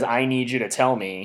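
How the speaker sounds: ordinary talk, nothing marked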